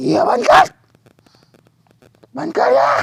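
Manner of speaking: high-pitched, loud, frantic shout.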